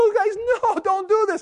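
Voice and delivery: put-on, very high, pleading, begging scream. Retelling how the boy screamed at his brothers as they buried him, acting out a scream. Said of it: "He's screaming".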